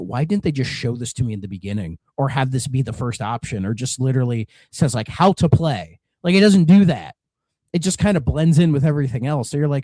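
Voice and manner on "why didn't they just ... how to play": usual speaking voice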